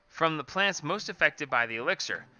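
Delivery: ordinary delivery, nothing marked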